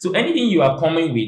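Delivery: ordinary talk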